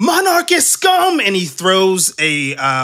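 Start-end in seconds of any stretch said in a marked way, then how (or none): 0.0-1.2 very high, shrill, shouted yell. Voicing a man about to throw a flaming ball through a window: yelling. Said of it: "you just hear him yell".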